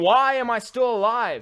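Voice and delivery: very high, squealing, drawn-out little cat wail. Retelling a cat hit on the highway, the speaker voices it: imitating a screaming little cat. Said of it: "In his little cat voice".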